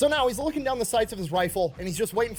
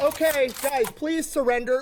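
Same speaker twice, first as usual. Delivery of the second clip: mock polite pleading tone, higher pitch; 6 semitones higher than usual. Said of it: "polite homeschool kid Terminator".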